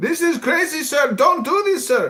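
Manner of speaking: mock aggressive male voice, Somali accent. Imitating a man from Somalia refusing an order: imitating an aggressive Somali man.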